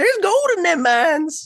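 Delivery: put-on very high, loud, grizzled old-timer prospector voice. Asked what Talk Like a Grizzled Prospector Day sounds like, demonstrating: grizzled prospector voice. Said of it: "What does that sound like?".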